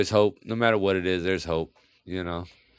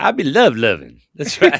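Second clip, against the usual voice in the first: loud, high comic voice with big swoops; 6 semitones higher, 8 dB louder than usual. Answering a request to say it in Eddie Murphy voice. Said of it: "now you gotta say it in Eddie Murphy voice".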